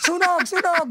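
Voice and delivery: loud, high shouting.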